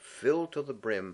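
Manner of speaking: plain reading voice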